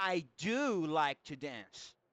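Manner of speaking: strong emphatic stress on do. English lesson in Portuguese, answering a doubting sentence: strong emphasis on do. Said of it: "dessa vez com mais ênfase".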